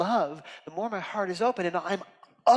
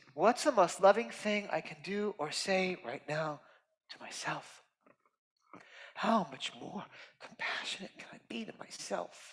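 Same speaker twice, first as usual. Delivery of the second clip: breathy whisper, voice welling with tears; 6 dB quieter than usual. Urging listeners to be more compassionate to themselves: tearful voice. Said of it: "you hear the tears come in my voice".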